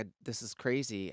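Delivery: ordinary delivery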